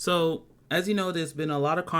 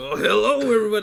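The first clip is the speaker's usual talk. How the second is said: put-on drunk voice, louder; 7 semitones higher, 8 dB louder than usual. Mocking how the person just introduced greeted everybody, imitating a drunk uncle. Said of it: "like your drunk uncle just walked in".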